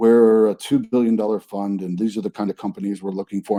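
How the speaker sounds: low, flat, droning one-note monotone delivery. Retelling a fund team's introduction at a pitch meeting: imitating a monotone delivery. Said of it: "And it's completely monotone".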